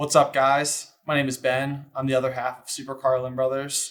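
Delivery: mock low-energy delivery. Told to lower his energy, Ben gets into character with mock low-energy delivery. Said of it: "Still lower energy, Ben".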